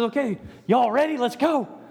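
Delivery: mock-excited, acted excitement. Speaker imagines greeting Jesus's return, acting out excitement. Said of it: "And be excited for that to happen".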